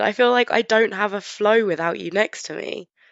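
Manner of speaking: ordinary delivery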